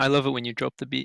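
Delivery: plain reading voice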